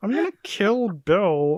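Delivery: high, slow frog puppet voice. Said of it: "giving her Kermit the Frog voice".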